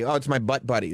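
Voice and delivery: normal talking voice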